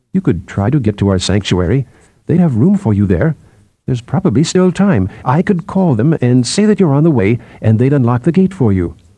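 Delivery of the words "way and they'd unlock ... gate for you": ordinary delivery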